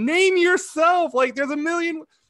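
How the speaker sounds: shrill, high, full-volume yelling scream. Recalling watching a show, the speaker re-enacts screaming at the tv. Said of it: "I'm just screaming at the TV".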